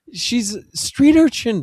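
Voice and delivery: high-pitched, incredulous tone.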